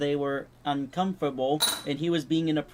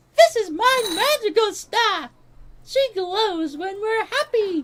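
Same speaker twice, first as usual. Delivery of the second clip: put-on kid character voice, higher and louder; 7 dB louder than usual. Doing a voice impression of Beemo introducing himself: Beemo voice impression. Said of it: "How's my voice impression of Beemo?".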